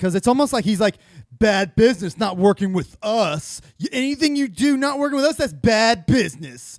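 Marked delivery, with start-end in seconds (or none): 1.4-6.8 entitled, aggrieved, put-out tone. Mocking a statement on bad business: imitating Jamie sounding entitled. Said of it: "Jamie sounds entitled by saying that".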